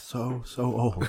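muttered under breath. In a role-play scene, a visitor to an old friend's shop mutters under his breath. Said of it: "under his breath".

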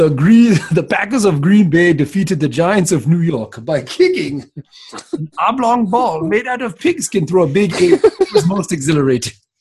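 put-on regal voice-assistant style voice with Nigerian accent. Imagining a phone assistant that talks like Eddie Murphy from Coming to America: Eddie Murphy as Hakeem voice. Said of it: "talk like Eddie Murphy from Coming to America".

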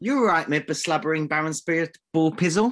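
high Welsh accent. Agreeing with the other speaker about a picture, in welsh accent. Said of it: "Fantastic Welsh accent".

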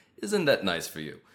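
put-on passive-aggressive villain voice. Retelling a game scene where the villain insults the king: passive-aggressive Ganondorf voice. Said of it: "Ganondorf actually is super passive-aggressive".

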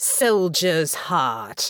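contemptuous, dripping with scorn. Graham calls out after Natasha as she walks away, dripping with scorn. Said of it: "his voice dripping with scorn".

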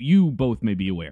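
ordinary delivery

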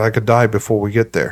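ordinary delivery

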